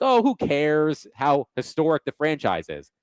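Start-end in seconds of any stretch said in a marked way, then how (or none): none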